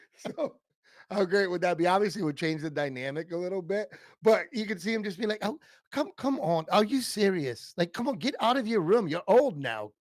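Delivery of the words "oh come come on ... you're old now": terrible put-on English accent, pitched high. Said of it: "That was a terrible English accent I just did".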